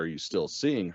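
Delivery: put-on worried tone. Retelling how the grandma asks a question: imitating a worried tone. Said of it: "in a very clearly worried tone is like".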